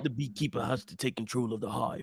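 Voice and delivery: put-on low, quiet tough-guy growl.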